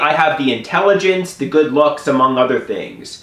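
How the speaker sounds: ordinary talk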